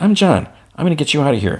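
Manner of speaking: gentle comforting tone. Retelling a scene where he crouches beside a frightened little girl: soft speech. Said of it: "he softly says".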